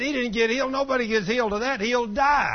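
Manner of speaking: high, loud, scoffing, insistent tone.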